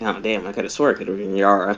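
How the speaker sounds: muttering under breath. Playing a character muttering to himself: muttering under his breath. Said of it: "mutters under his breath".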